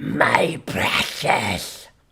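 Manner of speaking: rough, creaky croaking voice. Explaining voices to chat, quoting a line: Gollum voice. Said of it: "Schmeagol or whatever that dude's name is from Lord of the Rings".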